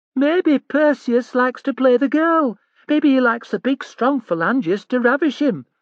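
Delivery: very high, jeering, mocking falsetto. Reading a scene where a bully taunts a rival: mocking falsetto voice. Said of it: "In a falsetto voice he said".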